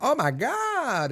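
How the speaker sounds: mannered, high, slow, stretched-out sassy imitation.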